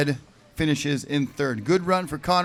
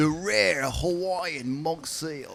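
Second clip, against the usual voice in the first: put-on British accent like a wildlife documentary narrator; 5 dB quieter than usual. Commentating on a surfer like a nature documentary, in a British BBC accent. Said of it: "Just gonna do my British, uh, B B C accent".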